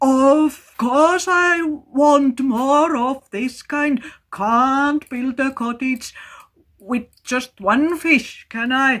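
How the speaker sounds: forced jolly cheer. Reading a story aloud, a frightened boy answers a voice: jolliest voice he could. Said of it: "with the jolliest voice he could".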